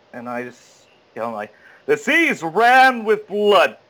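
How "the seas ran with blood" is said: high, loud, slow douchebag voice. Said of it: "So I come in big".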